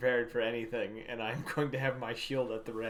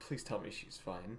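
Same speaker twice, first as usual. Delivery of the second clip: hushed, whispered mumble under the breath; 4 semitones lower, 12 dB quieter than usual. Voicing a character glancing back after a cut-off call: muttering under breath. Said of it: "just kind of mutter under my breath".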